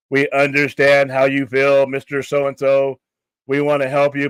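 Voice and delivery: loud, flat, scripted robotic voice. Speaker mocks customer-service agents reading from a script, robotic customer-service voice. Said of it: "They may as well have that robot voice".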